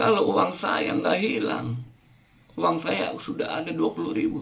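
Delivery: put-on little child's voice.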